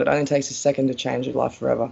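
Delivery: ordinary talk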